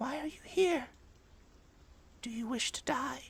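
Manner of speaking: tiniest little voice, pitched very high. Narrating a scene, the spider landing on your palm speaks in the tiniest little voice. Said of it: "in the tiniest little voice".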